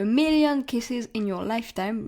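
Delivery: light, little, put-on English accent. Book review, naming an English-language title with an English accent. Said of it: "notez mon petit accent anglais".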